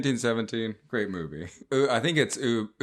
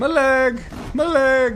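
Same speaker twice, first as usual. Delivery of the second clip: put-on Irish accent, very high, slow, drawn out; 6 dB louder than usual. Joking about wounded soldiers seeing cartoons on the ambulance; irish accent. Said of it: "I don't know why they sound Irish".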